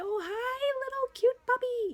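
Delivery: put-on very high baby-talk voice. Showing how she greets a puppy in an exam room: baby talk. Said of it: "I do a lot of baby talking animals".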